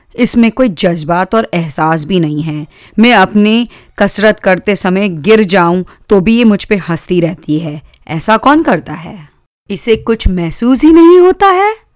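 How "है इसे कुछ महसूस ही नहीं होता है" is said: ordinary delivery, nothing marked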